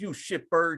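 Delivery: pissed-off outburst. Describing a movie scene to a friend who has seen it, imitating an angry outburst. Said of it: "he gets all pissed off".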